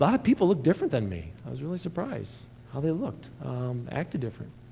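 heavy, thick sarcasm with swooping sing-song. Addressing listeners from Fulton County about Chicago, very sarcastic. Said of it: "I'm being very sarcastic now".

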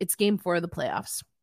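low, bone-dry, deadpan delivery. Repeating someone's quoted remark, retelling a deadpan quote. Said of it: "Deadpan, here's what Dave Haxtell said".

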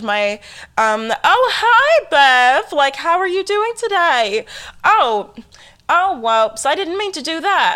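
slight put-on Mid-Atlantic accent. Showing the little accent the speaker always used to work on. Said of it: "I would always work on my little accent".

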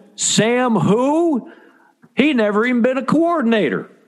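put-on Ozarks regional accent. Describing radio listeners in the Ozarks reacting to a hire: put-on Ozarks local voice. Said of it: "I don't know why I'd pick that voice".

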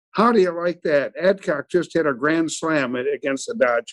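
ordinary talk

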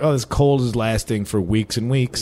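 usual speaking voice

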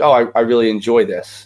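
ordinary talk

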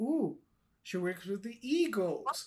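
ordinary talk, nothing marked

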